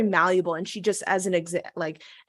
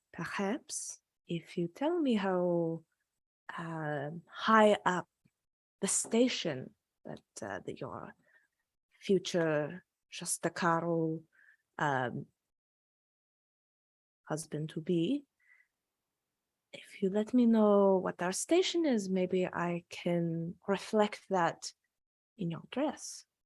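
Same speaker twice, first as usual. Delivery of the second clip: lowered, hushed, low voice; 8 dB quieter than usual. In a role-play scene, a character asks about a husband-to-be's station, lowered voice. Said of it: "she lowers her voice".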